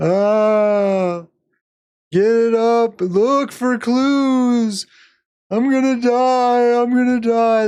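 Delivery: play-acted very high, dragged-out, slow stoned panic. Retelling how two very high characters acted: imitating panicking high people. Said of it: "They're just panicking, they're super high".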